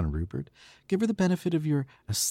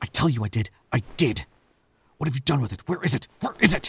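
angry, furious outburst, temper snapping. Arguing with a companion over something lost: angry, losing temper. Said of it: "Sorry I lost my temper".

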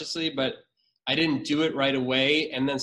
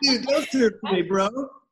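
put-on surfer voice, higher and louder; 8 semitones higher, 6 dB louder than usual. Recalling a surfer line they once came up with, in a surfer dude voice. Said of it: "the surfer voice was like".

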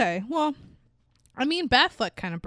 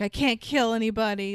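ordinary talk

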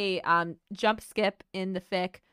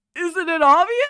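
put-on old man voice, louder; 11 semitones higher, 11 dB louder than usual. After a listener praises the voice, doing another line in an old man voice. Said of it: "let me do more".

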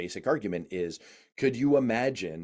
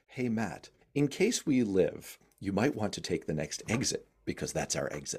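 mock very calm delivery; 3 dB quieter than usual. Retelling what Paul said in the car in dicey driving, imitating a very calm remark. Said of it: "Paul would just very calmly say".

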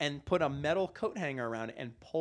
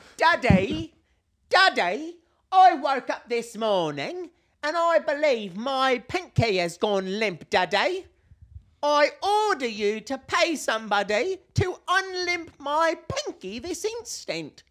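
entitled posh brat voice, shrill, very high, very loud; 11 semitones higher, 10 dB louder than usual. In an improvised comedy bit, switching from orphan boy into a posh entitled brat voice. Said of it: "from orphan boy into posh, entitled brat".

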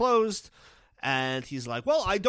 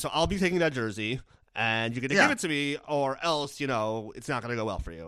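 usual speaking voice

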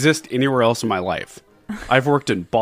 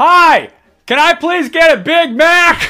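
very loud, shrill, high-pitched shout; 9 dB louder than usual. Ordering a Big Mac in a comedy bit, shouting. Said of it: "Why is he shouting?".

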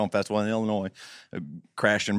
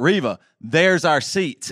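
deliberate, put-on loud and high raised voice; 5 semitones higher, 4 dB louder than usual. Retelling pointing out their seats to riva, retelling saying it loudly. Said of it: "i say real loudly i was like".

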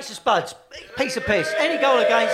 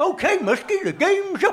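cartoony dog voice, pitched up; 9 semitones higher than usual. Wondering how a football manager would sound, the speaker does a Deputy Dawg voice. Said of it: "like Deputy Dog".

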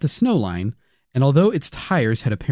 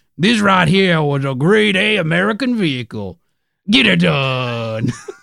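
slow, drawn-out Cajun drawl, "done" stretched; 4 semitones higher, 4 dB louder than usual. Reading a quoted line, Cajun Larry David voice. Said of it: "you Cajun, Cajun Larry David".

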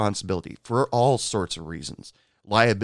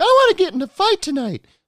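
very high, shrill, raised voice; 7 dB louder than usual. Redoing the customer's line more accurately: better impression of a bar customer. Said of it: "That's better".

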